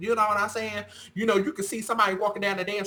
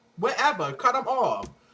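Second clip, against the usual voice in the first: usual speaking voice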